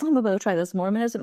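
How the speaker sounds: ordinary talk, nothing marked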